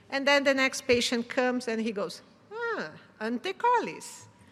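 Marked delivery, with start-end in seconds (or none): 2.5-4.2 very high, sing-song, put-on Italian accent. Act out an Italian man as the next clinic patient comes, imitating an Italian accent. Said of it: "with uh, his Italian accent".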